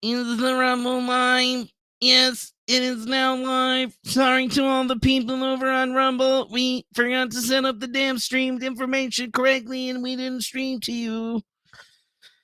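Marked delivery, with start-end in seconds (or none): 0.0-11.4 much higher, goofy, silly put-on voice. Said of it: "I don't know why I said that shit like that".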